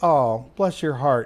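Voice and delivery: sweetly condescending, fake-nice tone. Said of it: "totally meant in a condescending, shitty way".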